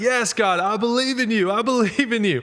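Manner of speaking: put-on man crying out, high and desperate. Retelling a joke, voicing the hanging man answering god: imitating a man crying out. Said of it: "he cried out".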